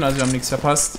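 plain

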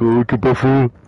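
loud, taunting, mocking voice. Retelling an online game chat: mocking imitation of a kid. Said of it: "I mimicked him".

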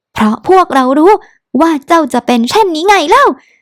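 sharp, snapping, high, tearful, tears welling up. Reading a character's retort in a story, snapping back near tears. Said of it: "เซินหลินตะคอกกลับน้ำตาคลอ".

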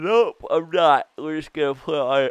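loud yawning speech. Player comments on a baseball game while yawning. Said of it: "Sorry, I was yawning".

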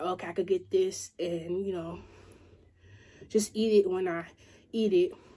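normal talking voice

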